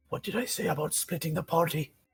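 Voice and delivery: voice kept hushed and quiet. Playing Carval after the party splits up, the speaker asks in a hushed voice. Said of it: "in a hushed voice".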